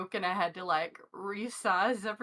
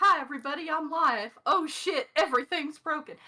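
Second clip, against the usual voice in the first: acted-out, high, panicked voice; 5 semitones higher than usual. Asked to introduce themselves on a live stream with broken gear, panicked. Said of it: "I'm just panic mode".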